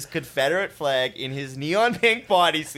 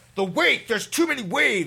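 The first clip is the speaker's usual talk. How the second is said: acted scream, higher pitch; 8 semitones higher than usual. Retelling a barefoot skier's panic on a calm lake: imitating someone screaming. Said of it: "He starts screaming".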